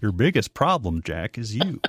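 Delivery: put-on Texas accent. Told his Texas accent sounds like Dr. Phil, a speaker does a Dr. Phil impression. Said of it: "sounded more like Dr. Phil".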